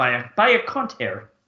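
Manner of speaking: attempted Australian accent that sounds Irish. Quoting how they'd say it in Australia, in a slightly Irish-sounding accent. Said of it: "You sounded a little bit Irish when you said that".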